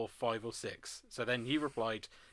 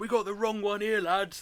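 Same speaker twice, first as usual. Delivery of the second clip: bellowing at the top of his voice, high shout; 9 semitones higher, 7 dB louder than usual. Retelling a man in a group shouting as they leave: imitating someone shouting loudly. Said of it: "shouts at the top of his voice".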